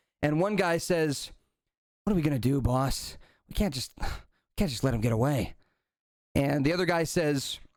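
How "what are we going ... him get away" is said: half-hushed but still voiced tone. Retelling one man asking his boss what to do, in hushed tones. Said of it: "kind of hushed tones".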